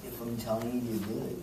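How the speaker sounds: soft, serious put-on voice.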